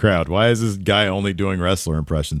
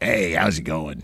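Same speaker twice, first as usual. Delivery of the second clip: guest announcer style; 4 semitones lower, 4 dB quieter than usual. Doing an impression as a guest announcer: Peter Falk voice. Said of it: "guest announcer Peter Falk".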